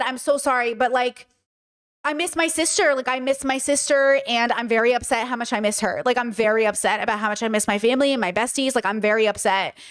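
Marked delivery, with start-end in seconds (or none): none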